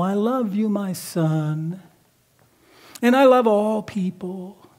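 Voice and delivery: put-on religious voice. Describing how the devil tries to razzle-dazzle you: the Devil's religious-sounding voice. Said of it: "some religious-sounding voice that says".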